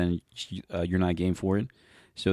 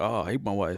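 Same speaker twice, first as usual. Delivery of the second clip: mock old man voice, complaining tone. Describing how old men talk about their wives: imitating an old married man. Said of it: "old man thing where they talk about, like, their wives".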